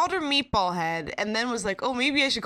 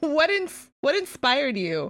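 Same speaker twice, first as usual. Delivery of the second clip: mock shouting, pitched higher; 4 semitones higher than usual. Retelling shouting at god while watching an episode: imitating own shouting. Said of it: "I was shouting at God".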